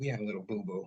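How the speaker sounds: hushed, very soft, toned-down gentle voice. Retelling telling a customer about a damaged dresser, imitating own softened voice. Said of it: "take my man voice down a little bit".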